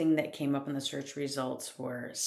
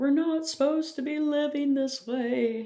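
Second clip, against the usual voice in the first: mock tearful outburst in a very high crying voice; 11 semitones higher, 6 dB louder than usual. Retelling own past words to a husband, imitating own crying. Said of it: "in tears".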